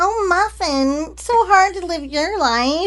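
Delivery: very high pitch with a long, drawn-out delivery. Doing a favorite impression of Anna Kendrick speaking to someone. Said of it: "I always do this impression of her".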